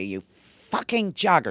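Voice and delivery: high-pitched, screamed delivery. Retelling how a mother screamed out the car window: imitating mother screaming. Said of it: "she was screaming out the window".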